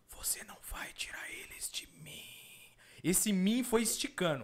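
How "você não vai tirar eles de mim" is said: eerie, slow whisper, each word stretched. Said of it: "Falou mais ou menos assim".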